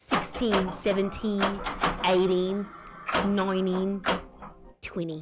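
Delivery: put-on Australian accent. Speaker showing the Aussie counting they love, counting in an Aussie accent. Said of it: "I love Aussie counting".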